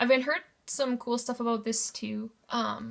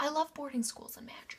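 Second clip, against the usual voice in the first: soft, hushed whisper under the breath; 3 semitones higher, 6 dB quieter than usual. Going through books they got, on a magic boarding-school novel: whispering. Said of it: "I don't know why I'm whispering".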